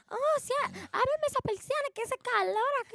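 put-on high-pitched old grandma voice.

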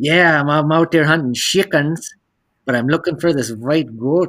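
put-on heavy Russian accent. Retelling what a man they chit-chatted with said, in a thick Russian accent. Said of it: "thick, heavy accent. And he must have been a Russian".

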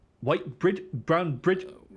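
put-on South African accent. Joking with a friend in a put-on voice: South African accent. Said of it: "That's my South African fella".

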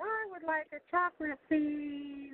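very high, slow, cute little voice. Joking about keeping a childhood voice into adulthood, in a cute little voice. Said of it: "cute little voice".

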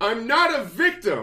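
very high, very loud, drawn-out shriek. Retelling a film scene after a flat tire: imitating Charlotte screaming. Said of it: "she screams after she gets a flat tire".

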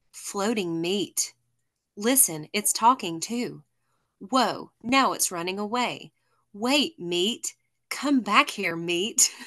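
slow, theatrical, overdone dramatic delivery. Reading a favorite quote from the episode aloud, dramatic Luffy quote reading. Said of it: "I'm going to read it really dramatically".

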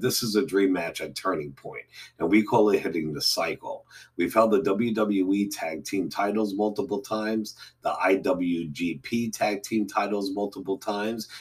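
ordinary delivery

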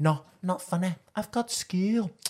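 put-on high voice with a strong British accent. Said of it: "She has, like, the strongest British accent".

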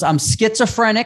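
acted, plain, calm, high-pitched delivery. Retelling a man at a front desk, imitating him speaking very loud. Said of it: "and very loud".

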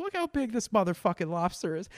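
put-on high, childlike, smiling voice. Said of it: "just smiling, like".

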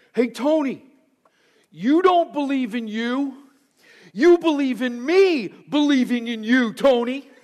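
play-acted loud carrying shout. Speaker retelling a voice calling out to Tony at bowling, imitating a loud voice. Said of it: "you hear this loud voice say".

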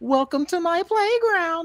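very high, tiny, slow little voice. Retelling a wrestling segment line: Alexa Bliss little voice. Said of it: "the little voice she does".

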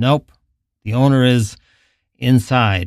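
ordinary delivery, nothing marked

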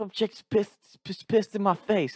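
very high, slow, lisping southern drawl. Retelling what JB said on waking up, in JB's southern accent with a lisp. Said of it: "JB had this southern accent with a lisp".

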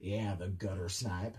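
deep, very low, gravelly rasping voice. Retelling a customer's reply, imitating a deep gravelly voice. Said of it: "she's got a deep, gravelly voice".

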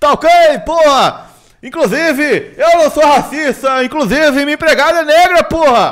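very loud ranting. Answering a request to imitate Bolsonaro: Bolsonaro impression. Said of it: "tô imitando ele".

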